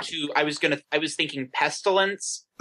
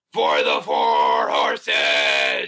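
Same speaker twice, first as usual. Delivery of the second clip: very slow, drawn-out battle-cry shout; 13 semitones lower, 4 dB louder than usual. Declaring a character's action in a battle, shouting as Temperance Deal. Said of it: "Temperance Deal is going to shout".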